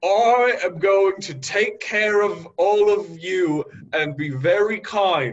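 loud, proud announcing. A character stands up before the others and loudly declares. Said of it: "puffs his chest out, and loudly says".

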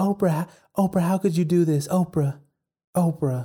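pleading tone.

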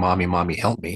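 put-on scared child screaming. Recalling being a scared child in the water, retelling a scared child's screams.

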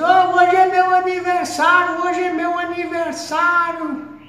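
very high, loud, stretched-out hollering. Retelling a man who passed by with a shopping cart, re-enacting a man shouting. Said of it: "gritando assim".

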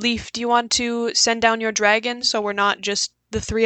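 plain

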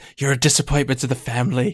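whispered, close to the ear. Voicing the listener's dear departed brother in his ear: whispering as Eglath. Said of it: "you hear whispered in your ear the voice".

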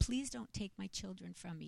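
mock tearful, desperate, pleading crying voice. Retelling a plea to police to keep the pictures: imitating own tearful plea. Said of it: "And I'm crying".

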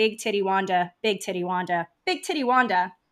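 ordinary talk, nothing marked

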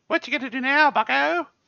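very high put-on girly voice, taunting. Game master repeating a creature's line to the players, in a girl's voice. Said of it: "It's in like a girl's voice".

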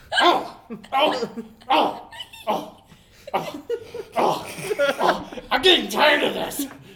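hammy villain voice, very slow, drawn-out pained oh's. The villain is punched in the nose again and again: villain crying out when punched. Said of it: "I am [name]. / And [name] will never be the same. And destroy the watchtower, the clock tower. Boom! Save the clock tower! Save the clock tower! Quiet, minion! Cloud of evil is here".

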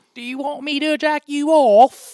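put-on very high, loud, slow Victorian child voice.

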